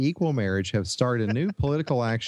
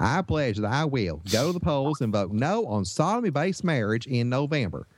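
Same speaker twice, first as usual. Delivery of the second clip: adopted Southern American accent, read aloud. Reading quoted lines aloud, put-on Southern accent. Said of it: "I'm going to have to adopt a Southern accent".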